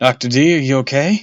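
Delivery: trembling voice. A narrator voices the storyteller calling to doctor d: shaky voice. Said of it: "I asked in a shaky voice".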